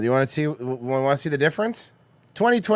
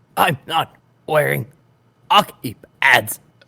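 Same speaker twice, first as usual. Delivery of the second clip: put-on breathless voice. Reading a line sent on Discord when asked: RFK voice. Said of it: "in R F K's voice?".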